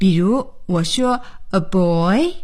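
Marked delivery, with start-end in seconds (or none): 1.5-2.3 put-on pitch rising at the end on a boy. Intonation drill where the listener answers with a fall: rising intonation on a boy. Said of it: "我用升调".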